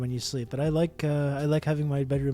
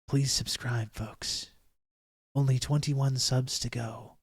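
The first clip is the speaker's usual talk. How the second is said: mock ASMR whisper voice. Asking viewers to subscribe, trying out a put-on ASMR whisper. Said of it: "a A S M R situation".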